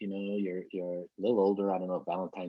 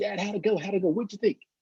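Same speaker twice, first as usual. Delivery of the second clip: put-on very high, eager, bursting with excitement; 13 semitones higher, 6 dB louder than usual. Retelling asking a father for feedback after a speech, imitating own excited asking. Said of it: "I was all excited".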